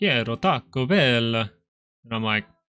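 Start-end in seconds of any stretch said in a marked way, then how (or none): 0.0-1.3 put-on Spanish spoken with an Italian accent. Imitating a brother who speaks spanish like an italian: imitating brother's spanish with italian accent. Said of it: "he speaks Spanish like an Italian".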